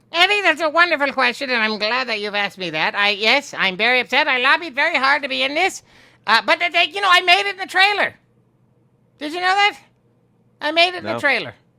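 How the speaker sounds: high-pitched put-on character voice held steady. Answering an interviewer's question about a show, in character: Skeletor voice.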